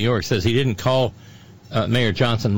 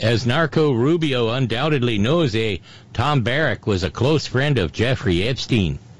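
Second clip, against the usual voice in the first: corny put-on Canadian accent, laid on thick. Quoting Canadian commentator Dimitri Lascaris, in a cheesy Canadian dialect. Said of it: "Cheesy Canadian dialect".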